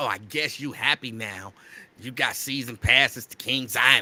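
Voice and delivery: play-acted nasty, snide, mean-spirited tone. Retelling what his then wife said about the passes: imitating a nasty remark. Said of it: "she said it with such a nasty".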